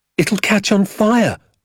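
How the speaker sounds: shrill, very high cry. As a flame leaps into the balloon, the narrator cries out to Danny. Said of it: "I cried".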